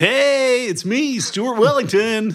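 tubular 90s cartoon hero character voice. Podcast host introducing himself at the show's opening, in a 90s cartoon character voice. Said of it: "doing your voices like your 90s cartoon characters".

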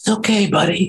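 quiet, soft, hushed whisper. A father eases toward a frightened deer as his family watches: hushed whisper. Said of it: "speaking in a hushed whisper".

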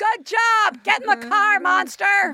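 high, light, encouraging call-out. Joking about yelling encouragement at a parent by the road: mock yelling. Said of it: "I'm gonna yell".

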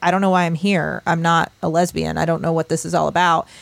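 ordinary delivery

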